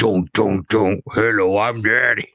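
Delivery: father monster voice. Voicing the daddy creature arriving to introduce itself: daddy creature voice. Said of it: "bring out the daddy".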